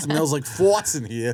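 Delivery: put-on Long Island-accented speech. Imitating another speaker's complaint about a smell: imitating a Long Island accent. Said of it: "That Long Island accent".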